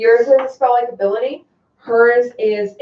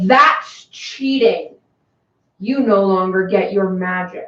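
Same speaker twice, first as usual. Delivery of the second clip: grand, disembodied voice as if from above; 3 semitones lower than usual. Narrating a game, answer the player putting on the snow globe in a booming voice. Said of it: "You hear a booming voice".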